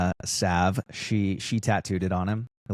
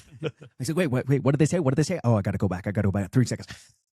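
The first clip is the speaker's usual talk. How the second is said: very rapid, rattled-off, rapid-fire speech; 4 semitones higher than usual. Talking fast as a test for a listener who plays this at three times speed: talking very fast. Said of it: "It's too hard to talk that fast".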